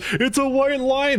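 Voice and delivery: acted-out very high shout. Retelling what a lady in line yelled during a merge: imitating her yelling. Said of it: "yelling at me".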